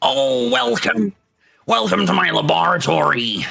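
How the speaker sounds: raspy creature voice. Voicing a big hulking bugbear greeting players in his laboratory: hulking bugbear voice. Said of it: "a big hulking bugbear ... turns around and says".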